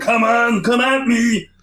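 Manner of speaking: yelling put-on soldier voice. Retelling a game soldier's yelled line: yelling bad Arnold impression. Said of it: "a bad Arnold impression".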